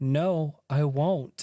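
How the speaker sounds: imitated baby talk voice. Retelling teasing someone hungover and miserable in bed: imitating own baby talk. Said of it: "baby talking".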